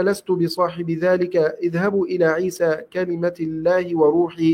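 normal talking voice

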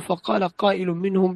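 ordinary talk

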